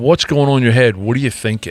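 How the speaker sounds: ordinary delivery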